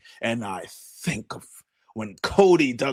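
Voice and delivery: put-on projecting, theatrical voice. Imitating a wrestler acting like a thespian: imitating John Cena projecting his voice. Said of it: "he's projecting his voice".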